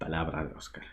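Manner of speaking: soft, unvoiced, mock solemn joking whisper.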